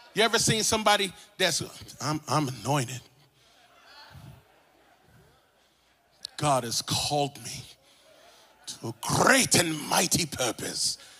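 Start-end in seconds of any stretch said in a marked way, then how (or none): 2.0-11.0 put-on British accent. Imitating a self-important anointed person: imitating someone in a British accent. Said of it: "Why are you speaking in a British accent".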